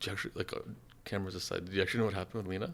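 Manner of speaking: soft, hushed, confiding whisper. Asking another speaker, cameras aside, about what happened: whispering. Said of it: "I don't like that you're whispering".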